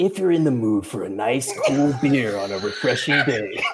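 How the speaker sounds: sultry radio announcer voice. Egged on by the others, the speaker improvises a beer ad: sexy radio voice. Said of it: "I'm gonna wind up doing the sexy radio voice".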